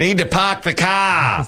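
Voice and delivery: put-on very high-pitched Boston accent. Retelling how he spoke at a parking gate after a dare, Boston accent. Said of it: "use his Boston accent".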